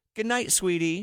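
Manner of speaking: put-on tiny, high-pitched three-year-old toddler voice. Speaker retelling what three-year-old Sophia said at bedtime: Sophia's tiny three-year-old voice. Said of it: "in her tiny little three year old voice".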